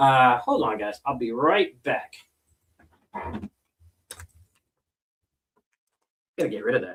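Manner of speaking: talking with something in the mouth. Greeting viewers before stepping away, talking with dip in mouth. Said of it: "It's kinda hard to talk with that in there".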